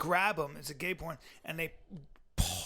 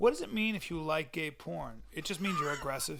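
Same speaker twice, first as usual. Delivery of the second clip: ordinary delivery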